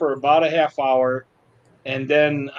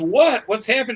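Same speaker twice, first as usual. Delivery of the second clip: mock alarmed, startled, frightened, pitched up; 8 semitones higher than usual. Retelling the driver's reaction after the speaker screamed to stop the truck, imitating someone frightened. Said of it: "I scared the heck out of her".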